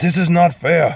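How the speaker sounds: put-on awful high Scottish accent drifting into Russian-sounding. Retelling a complaint made before the judge, in a bad Shrek impression. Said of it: "sounds like a horrible Russian impersonation".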